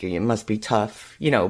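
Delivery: mock sarcastic tone. Recapping a story, the speaker quotes a character's remark, retelling it sarcastically.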